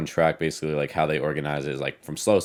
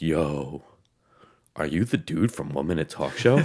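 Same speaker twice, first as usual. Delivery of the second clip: completely spaced-out, dazed voice. Retelling a stranger stopping him before a race: imitating someone sounding out of it. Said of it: "he just sounded, like, so out of it".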